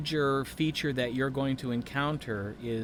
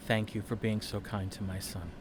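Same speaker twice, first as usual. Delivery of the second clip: hushed, low, soft half-whisper under the breath; 4 semitones lower, 4 dB quieter than usual. A father speaks while hugging the listener's character, half-whispering. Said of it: "he just whispers".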